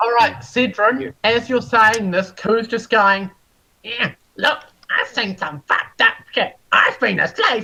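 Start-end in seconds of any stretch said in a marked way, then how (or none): 3.8-7.6 put-on childish taunting tone. Voicing a character who mimics another player's words: mocking childish imitation. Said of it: "mimicking you like a child would".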